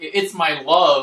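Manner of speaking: put-on loud New York accent. Retelling a dubbed cartoon scene where a villain steals Molly's energy, Molly's New York accent. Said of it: "they gave her a New York accent".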